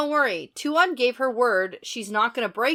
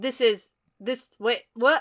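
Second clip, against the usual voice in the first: ordinary talk, nothing marked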